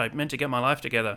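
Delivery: ordinary delivery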